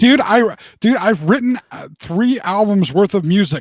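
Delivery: exasperated, indignant reply.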